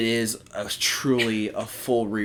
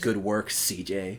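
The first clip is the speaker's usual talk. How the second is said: put-on very slow, drawn-out, insincere passive-aggressive tone; 2 semitones lower, 4 dB quieter than usual. Quoting someone who always says good work to them: mock passive-aggressive tone. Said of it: "in a passive aggressive tone".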